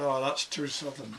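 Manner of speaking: ordinary delivery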